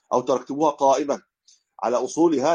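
plain

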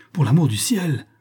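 high, cried-out voice. The narrator begs Henry not to fight the challenger, cried out. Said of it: "m'écriai-je".

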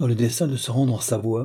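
plain

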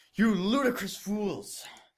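very high, shrill, furious angry yell. Reading a story aloud, a headmaster scolding two students: angry shouting. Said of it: "he shouted".

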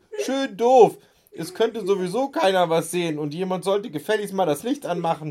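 loud, high calling out across the room. Narrator reads someone calling from the back of the dark room, calling out. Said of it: "rief Dirk".

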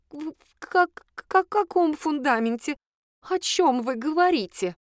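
trembling, high-pitched tone. A woman grabs her companion's sleeve and asks back, in a trembling voice. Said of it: "дрожащим голосом переспросила".

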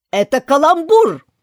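loud, cross, bad-tempered, angry yell. The king, met with silence from everyone, shouts angrily. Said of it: "закричал сердито король".

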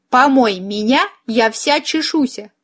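plain reading voice

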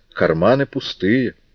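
ordinary delivery, nothing marked

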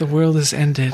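imploring, beseeching, begging tone. Retelling a movie scene where a character is just pleading: imitating a pleading character. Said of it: "she is just pleading".

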